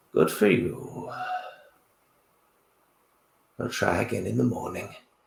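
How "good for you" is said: put-on withered, creaky, raspy old-man voice. A withered old man speaks from the room: quiet, raspy voice. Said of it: "in a quiet, raspy voice".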